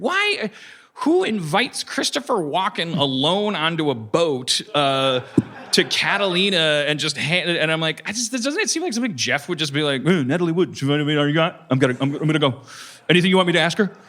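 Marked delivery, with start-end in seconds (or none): 10.0-13.9 cartoon bear character voice. Imitating another speaker accepting a boat invitation: Yogi Bear voice. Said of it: "Why am I Yogi Bear?".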